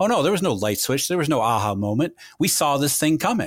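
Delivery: ordinary talk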